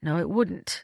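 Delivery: ordinary delivery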